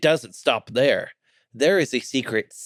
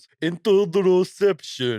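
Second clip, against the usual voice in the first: put-on Japanese anime-style voice, higher; 7 semitones higher than usual. Retelling a friend's joke in the car: imitating an anime japanese voice. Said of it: "anime Japanese voice and goes".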